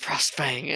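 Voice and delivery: whispered under the breath. Calling on a spirit while in character: whispering under breath. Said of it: "I'm gonna whisper under my breath".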